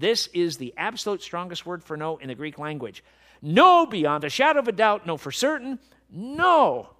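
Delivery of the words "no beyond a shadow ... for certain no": fervent, worked-up, very loud, drawn-out "no". Addressing the audience, getting worked up. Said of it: "I'm getting worked up about this".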